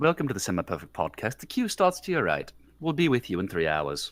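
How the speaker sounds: very deep, low-pitched British office clerk voice. Continuing the podcast welcome as a clerk at a British DMV: British DMV clerk voice. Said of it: "He sounded like a, some guy at a, at a British D M V".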